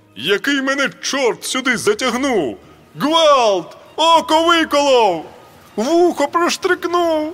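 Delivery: shrill, very high-pitched, roaring bellow. Narrator reads a man digging a wolf pit through thorny brush, roaring. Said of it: "ревів Шевчук".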